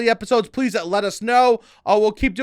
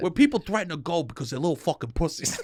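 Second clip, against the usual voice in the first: slightly put-on Staten Island dad voice, quieter; 5 semitones lower, 7 dB quieter than usual. Imitating what dads on Staten Island would say, in a Staten Island dad voice. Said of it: "I adjusted my voice slightly".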